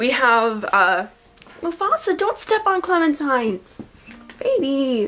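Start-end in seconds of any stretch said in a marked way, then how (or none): 1.6-5.1 high pet-talk voice. Speaker breaks off a story to talk to their cat, high voice for talking to cat. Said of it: "my voice goes really high when I talk to my cat".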